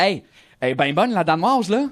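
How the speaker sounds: put-on clownish Québécois accent. Recounting his one line as a Québécois buffoon in a French comedy, Québécois accent. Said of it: "j'ai tenté avec la- l'accent québécois".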